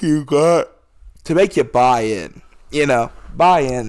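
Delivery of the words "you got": words stretched and drawn out by a yawn. A podcast host late at night, yawning while talking. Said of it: "Sorry, I'm just yawning".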